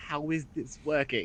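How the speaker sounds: high, private half-whisper under the breath. Silver, following Rad's voice through the bushes, half-whispering to himself. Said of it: "like whispering to himself".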